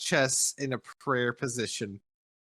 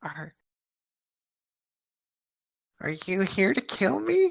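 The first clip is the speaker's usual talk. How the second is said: gentle, delicate, slightly high-pitched voice; 8 semitones higher than usual. Narrating a game, voicing a character speaking to a player in a very soft voice. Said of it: "you hear him kind of very softly say".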